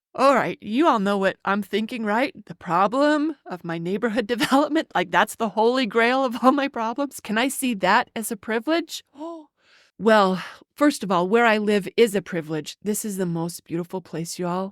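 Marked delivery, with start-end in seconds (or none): 12.8-14.7 hushed, reverent, worshipful tone. Telling listeners about the place where the speaker lives, in a reverent tone. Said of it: "did you just hear the reverent tone".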